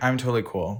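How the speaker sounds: usual speaking voice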